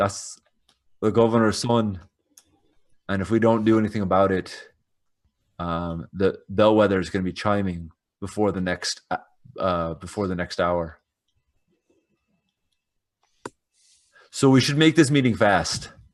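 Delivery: low voice. Voicing a character warning companions about the governor's son: low tone. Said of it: "I just sort of say in a, in a low tone".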